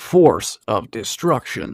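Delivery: deep, bass-heavy video game announcer voice. Asked to say a name in the Halo voice, the speaker does the Halo voice. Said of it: "Please say it in the Halo voice".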